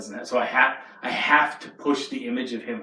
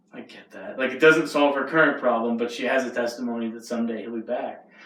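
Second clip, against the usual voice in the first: usual speaking voice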